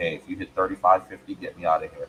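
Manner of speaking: plain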